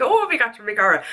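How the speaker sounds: put-on Irish accent. Showing what a put-on accent sounds like: put-on Irish accent. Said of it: "if someone did that to me with an Irish accent".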